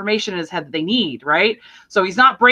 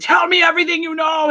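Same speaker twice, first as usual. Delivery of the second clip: piercing, shrill, very high shouted scream; 9 semitones higher than usual. Retelling a movie scene, imitating Gary Oldman screaming. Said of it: "he's screaming at Kevin Costner".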